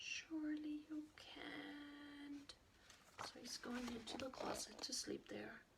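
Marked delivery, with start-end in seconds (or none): 0.0-2.5 put-on teeny, tiny little voice, drawn-out can't. Reading a story, a character speaks into the closet's farthest corner, tiniest possible voice. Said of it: "in the tiniest possible voice".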